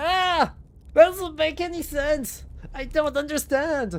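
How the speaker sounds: overexcited, loud, high-pitched shouting. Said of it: "Please stop yelling".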